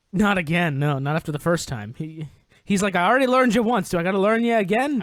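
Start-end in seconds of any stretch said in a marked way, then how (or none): 2.9-5.0 put-on old-timey forties wisecracking smart-aleck tough-guy man voice. Imitating a huge character who already beat someone once: wisecracking 1940s man voice. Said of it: "he talks, like, in wisecracking forties man".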